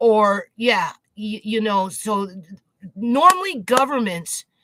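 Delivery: stammering, halting over the opening words. Speaker struggling to get a point out, stuttering. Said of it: "I know I'm stuttering".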